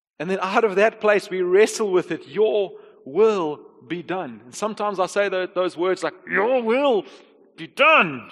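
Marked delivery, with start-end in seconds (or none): 6.3-8.1 forced out slowly through clenched, gritted teeth. Retelling how they sometimes say these words to god, acting out gritted teeth. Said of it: "It's through gritted teeth".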